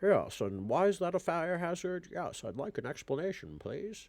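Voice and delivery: calm, soft, even grown-up voice. Retelling how to talk calmly to the adults: calm voice, kind of Obama. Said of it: "but that's my calm voice".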